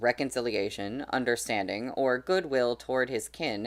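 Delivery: ordinary delivery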